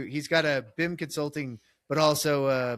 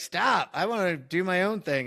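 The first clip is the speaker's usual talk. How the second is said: put-on defiant kid voice, yelling; 4 semitones higher than usual. Retelling what the kid yelled back: imitating someone yelling. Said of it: "he's already yelling at me like".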